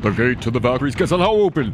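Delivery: high, booming, skipping, glitching wizard narrator voice.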